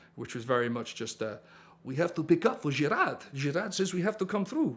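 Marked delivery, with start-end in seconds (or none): 1.9-4.8 high-pitched, generic put-on European accent. Retelling bluffing past police at a barrier: put-on european accent. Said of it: "I put my best sort of European accent on".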